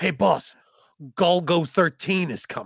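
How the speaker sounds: slow, deliberate henchman voice. Acting out a henchman warning the villain: acting as a henchman. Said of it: "I'm a henchman".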